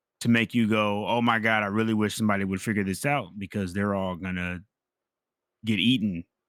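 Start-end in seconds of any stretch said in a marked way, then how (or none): none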